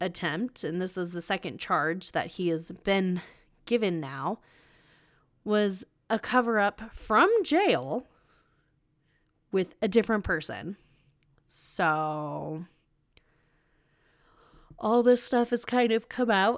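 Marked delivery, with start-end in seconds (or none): 11.5-16.6 yawning, talking through a yawn, "so" drawn out. Recounting a criminal case, the speaker apologizes for yawning: yawning. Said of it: "I am yawning so much right now".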